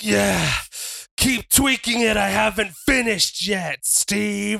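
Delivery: acted groan turning into words. Retelling a match, the speaker voices Dom as his groan shifts: acting out a groan shifting to words. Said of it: "the groan kind of shifts".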